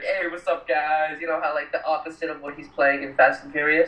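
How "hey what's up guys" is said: put-on upbeat voice, slower pace. Imagining an actor greeting people in real life, imitating Vin Diesel, lighthearted. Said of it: "he's like totally lighthearted".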